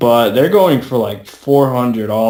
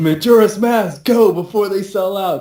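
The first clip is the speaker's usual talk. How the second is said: play-acted childish, frantic high-pitched yell; 9 semitones higher than usual. Retelling a customer at a GameStop register, imitating him yelling. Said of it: "and yells".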